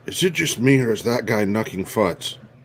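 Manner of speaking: hushed, whispered aside. Player character whispers an aside to a companion about a man, whispering. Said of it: "I'm gonna whisper to Gash".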